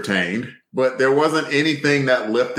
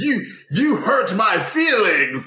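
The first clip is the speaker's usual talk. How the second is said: mock indignation, higher pitch; 11 semitones higher than usual. Retelling a movie scene where Watson objects: imitating someone indignant. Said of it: "Watson got all indignant".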